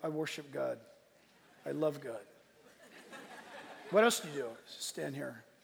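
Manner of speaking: acted flat delivery. Describing colonial Puritans, acting out how they supposedly talked: mock-deadpan Puritan impression. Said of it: "And they're just like deadpan".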